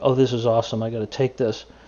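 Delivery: ordinary delivery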